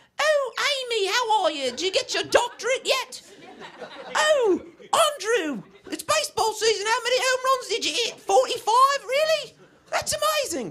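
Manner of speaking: put-on very high-pitched elderly English lady voice. Retelling a family party, doing the great aunt: imitating old English lady. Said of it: "she's this old English lady".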